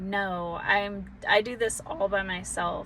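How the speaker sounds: plain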